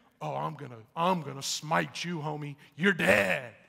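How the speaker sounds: rough, creaky, raspy voice. Retelling a Bible story, acting out Esau's imagined thoughts: voicing Esau. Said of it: "Can you imagine what Esau might be thinking?".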